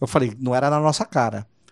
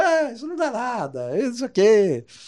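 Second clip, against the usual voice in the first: laughing speech, higher pitched; 10 semitones higher than usual. Retelling Bruno's laughing reply: imitating Bruno laughing while talking. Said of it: "o Bruno já vem gargalhando".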